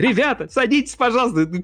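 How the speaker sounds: very high, thin, piping voice. Demonstrating how telling the group to sit down sounds in a thin high voice. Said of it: "когда я тонким голосом говорю".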